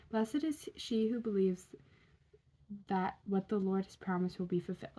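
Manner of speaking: ordinary talk, nothing marked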